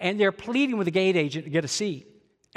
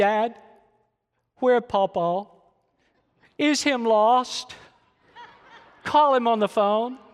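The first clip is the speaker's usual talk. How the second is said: put-on slow small child's voice, breaking and cracking; 4 semitones higher than usual. Retelling a grandson asking where his grandfather is: imitating a child's voice cracking. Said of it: "his little voice cracked".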